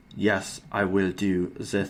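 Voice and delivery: very slow, weighty, deliberate, each word its own beat. Imagining agreeing to a guest role: Werner Herzog impression. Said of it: "I can't do a Werner Herzog impression".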